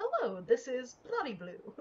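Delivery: polished, put-on, sing-song customer service phone voice. Asked about a good customer service voice, answering a call in polished customer service phone voice. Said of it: "Does he have a good customer service voice?".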